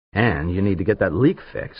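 ordinary talk

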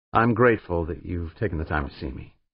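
ordinary delivery, nothing marked

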